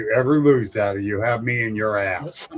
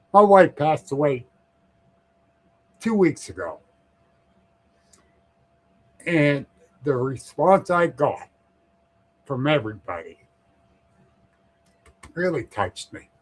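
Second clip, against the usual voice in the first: teary voice, choking up, near tears; 3 semitones higher than usual. Telling another speaker his wife passed away, on the verge of crying. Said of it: "I'm gonna start crying".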